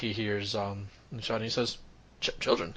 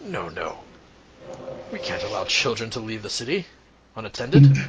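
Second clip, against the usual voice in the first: rough, gruff, loud, booming voice; 11 dB louder than usual. Answering children who say they're meeting their parents, in a gruff voice. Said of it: "you hear a gruff voice".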